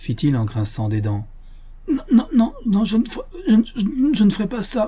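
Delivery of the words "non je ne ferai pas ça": stammering badly, much higher pitch, slower. Narrator reading the fool's answer to his accuser, stammering horribly. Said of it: "dit l'idiot en bégayant affreusement".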